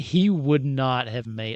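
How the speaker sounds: HE slowed, stressed and punched out loud.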